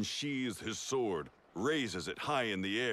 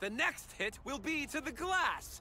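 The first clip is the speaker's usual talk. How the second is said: very high, loud yelled line. Narrator voices the captain answering the shadow, yelling back. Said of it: "The captain yells back".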